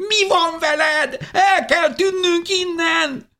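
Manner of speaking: very high, shrill, drawn-out, panicked shriek. As everyone scatters to hide, a woman behind the narrator is shrieking at a companion. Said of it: "visította Szozánne mögöttem".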